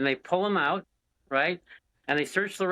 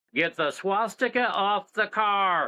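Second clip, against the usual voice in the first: put-on loudspeaker yell, higher pitch; 4 semitones higher than usual. Retelling a cop yelling over a loudspeaker: imitating a loudspeaker yell. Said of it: "yells over their loudspeaker".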